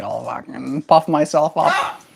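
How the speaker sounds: high-pitched put-on voice of a little bird. Voicing the bird that just puffed itself up: voicing the bird puffing up. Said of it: "he was like".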